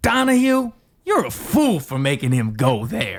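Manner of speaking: very slow, sly, snarky, with attitude. Performing a requested line reading: sly and snarky with attitude. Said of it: "sly, snarky with an attitude".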